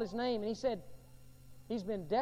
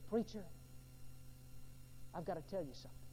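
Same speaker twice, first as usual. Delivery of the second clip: very weak, frail, whispered near-whisper voice; 6 semitones lower, 12 dB quieter than usual. Preacher retells a man who beckoned him over, imitating a very weakened voice. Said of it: "in a very weakened voice".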